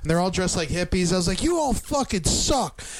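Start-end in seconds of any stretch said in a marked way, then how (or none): 1.4-2.8 mock, slow, drawn-out holler, pitched up. Recounting yelling at undercover cops at a concert, retelling a yell. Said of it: "I'm like yelling at all the guys".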